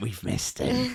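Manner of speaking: very high, eerie, unsettling, creepy voice. Reminding a co-host what they said when a player scored: retelling in a creepy voice. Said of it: "In that creepy voice as well".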